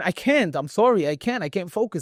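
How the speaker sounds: put-on crying. Speaker retelling a phone call with brother, retelling own crying. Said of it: "And I started like crying".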